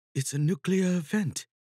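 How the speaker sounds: hushed, quiet whisper. Mustang, rushing to the computer, whispering. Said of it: "she whispers".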